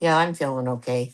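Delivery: mopey, gloomy donkey voice. Answering whether she feels better: Eeyore-like answer. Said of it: "the best Eeyore answer I've ever gotten".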